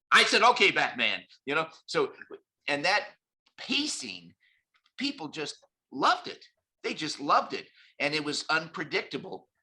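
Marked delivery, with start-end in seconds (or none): 0.4-1.2 put-on quick delivery, louder. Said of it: "the more fast talking and paced I was".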